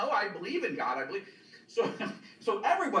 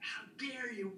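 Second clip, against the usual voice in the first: put-on furious screaming, higher; 4 semitones higher, 9 dB quieter than usual. Retelling how a furious religious soldier screamed at a son: imitating someone screaming furiously. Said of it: "he's screaming at my son in Hebrew".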